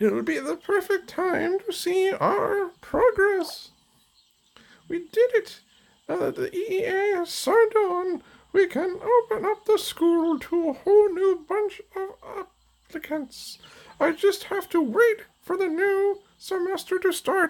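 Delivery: very high, badly done character voice. Voicing a character who speaks about the school, in a terrible Twilight voice. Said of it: "That's going to be a terrible Twilight voice".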